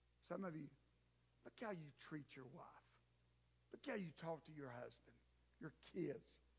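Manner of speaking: very quiet, low, taunting whisper. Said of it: "he's whispering it right now".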